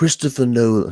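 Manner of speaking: put-on British accent. Trying a British accent on request, imitating Brian's British accent. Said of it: "kind of do Brian's accent".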